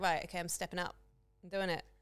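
ordinary delivery

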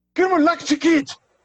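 very high, screamed put-on German accent. Naming a German concept, the speaker screams it in a put-on German accent. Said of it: "I'm going to use my German accent".

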